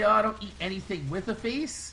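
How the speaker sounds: usual speaking voice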